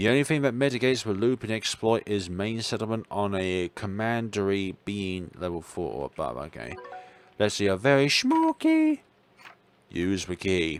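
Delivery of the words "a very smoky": exaggerated fake cute voice, higher pitch. Saying an item's name while using it in the game: put-on overly cutesy voice. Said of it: "you gotta do it in an overly cutesy voice".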